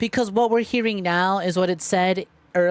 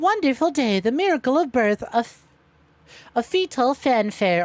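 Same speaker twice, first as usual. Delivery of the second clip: put-on snake girl voice. Like you're a cheerful, slinky snake-girl character delivering a gleeful announcement with a silly sing-song slither in your voice. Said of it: "Why do I sound like Mia from Monster Musume?".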